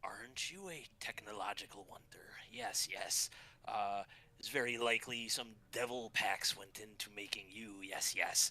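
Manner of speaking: eerie, gawky, creepy rat-demon character voice. Voicing the summoned rat demon greeting a new person: creepy, awkward rat demon voice. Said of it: "his all creepy, awkward self".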